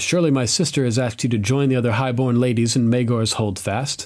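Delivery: ordinary delivery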